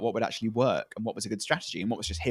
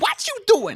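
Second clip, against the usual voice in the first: shrill, very high, loud, terrifying mother voice; 7 dB louder than usual. Retelling how Suri reacted, imitating Suri as a terrifying mother. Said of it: "Is this just Suri impression?".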